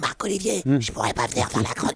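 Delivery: deathly, sepulchral voice from beyond the tomb. Showing how an employee might phone the boss to call in, in a sepulchral voice. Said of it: "avec une voix d'outre-tombe".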